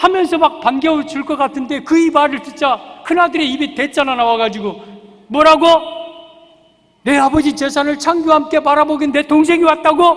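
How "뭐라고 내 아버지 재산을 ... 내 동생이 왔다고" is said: high, loud, angry retort. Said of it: "화를 내, 화를 내".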